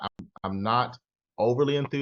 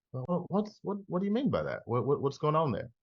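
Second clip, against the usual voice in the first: curious, probing, inquisitive pitched-up tone; 5 semitones higher, 4 dB quieter than usual. Demonstrating changes in tonality during a training, curious. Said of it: "I just had a curiosity".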